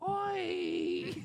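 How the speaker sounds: high-pitched put-on shout.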